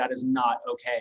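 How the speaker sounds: ordinary talk, nothing marked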